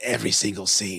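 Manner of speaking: mock raspy smoker voice. Host on a live stream tries a Brian impression, smoker's rasp. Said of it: "Like a smoker's lung there".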